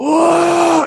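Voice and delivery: mock yell, high-pitched.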